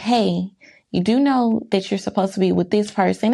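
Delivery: put-on sweet, nice delivery. Retelling asking a coworker about a schedule change: retelling a sweet, nice tone. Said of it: "I said it really nice, really sweetly".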